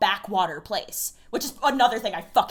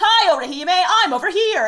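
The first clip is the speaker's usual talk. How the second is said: big showy persona voice, very loud; 8 semitones higher, 9 dB louder than usual. Speaker describing how Shinji talks in the classroom, loud Shinji impression. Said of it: "he's just being really, really loud".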